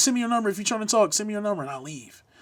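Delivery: loud, high yelling. Speaker retells yelling at a girl over other guys: retelling a yell. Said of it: "just yelling, spamming it".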